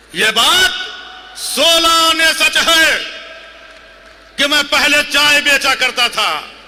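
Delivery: forceful, declaiming delivery. Retelling someone's answer to a question, retelling a shouted reply. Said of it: "इतना चिल्ला क्यों रहा है?".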